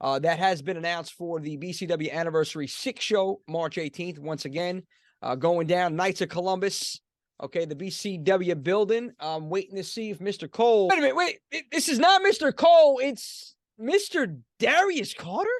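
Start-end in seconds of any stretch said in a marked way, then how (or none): 10.9-15.5 shocked, startled, surprised double-take exclamation. Announcer expecting Mister Cole finds Mister Darius Carter arriving instead, surprised. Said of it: "there's shock in your voice".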